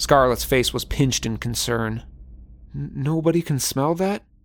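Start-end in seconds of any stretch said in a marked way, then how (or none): 2.7-4.2 weak, feeble voice, higher pitch. Abby, just sick from the smell of a dead cat, asks the others, weak. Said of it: "Abby said weakly".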